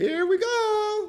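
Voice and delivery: very high put-on cartoon voice with go stretched. Recalling the moment the market gapped up, in a Mario voice. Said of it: "Ain't that how Mario do it? ... my Mario voice".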